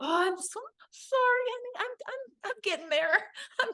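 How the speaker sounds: very high, sheepish, apologetic voice.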